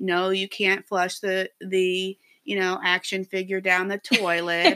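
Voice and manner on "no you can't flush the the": ordinary delivery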